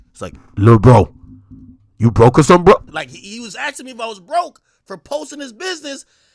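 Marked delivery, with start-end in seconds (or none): 0.6-2.8 deep, very loud, booming put-on voice. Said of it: "I'm gonna just say it in Shaq's voice".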